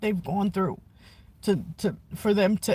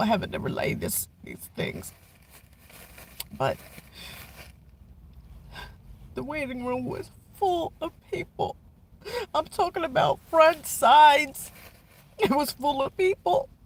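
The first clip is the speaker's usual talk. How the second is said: overcome with emotion, higher pitch; 6 semitones higher than usual. Describing a full waiting room at an appointment, emotional. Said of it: "I'm just emotional right now".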